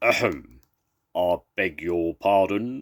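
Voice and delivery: growly voice, loud and slow. Narrator reading a story where Percy sneaks up on sleeping animals, Percy's deep, growly voice. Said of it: "said Percy in a deep, growly voice".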